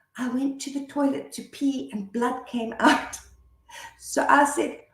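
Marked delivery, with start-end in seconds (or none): 0.1-3.1 tiny, soft, hushed little whisper. A mother retells her child's whispered confession, quoting a soft little whisper. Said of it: "this little voice whispers".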